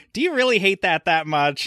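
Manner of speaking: very high, put-on scolding voice. Retelling being yelled at over a review, a Vanessa impression. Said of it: "you did an impression of your wife".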